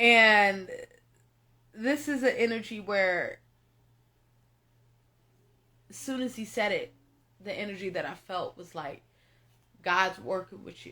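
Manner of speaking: low, tearful voice, close to crying. Speaking to the audience about someone they've been with for years, tearing up. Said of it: "I'm tearing up".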